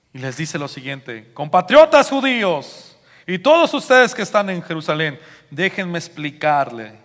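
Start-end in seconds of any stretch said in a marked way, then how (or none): 1.3-6.8 loud, high voice at the top of the lungs. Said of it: "dijo a voz en cuello".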